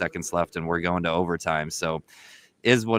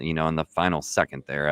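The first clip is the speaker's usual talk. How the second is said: ordinary talk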